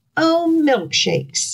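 dizzy exclamation. Narrator reads the cow's line after the haystack falls on it, cried out dizzily. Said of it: "cried the very dizzy cow".

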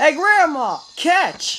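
high, loud taunting shout.

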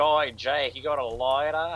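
put-on thick, full Australian accent, high and loud. Imagining Seb speaking to Jake: imitating Seb in full Aussie accent. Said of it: "she's got like a full Aussie accent".

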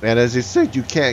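voice cracking, breaking. Explaining that the closed repair garage is a dead end, voice cracking. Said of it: "my voice cracked".

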